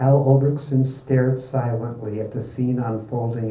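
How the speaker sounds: ordinary delivery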